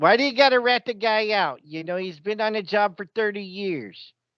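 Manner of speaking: high-pitched Chicago accent. Asked to do a Chicago accent, improvising a cop's line in a Chicago accent. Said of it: "Can you do a Chicago accent for me?".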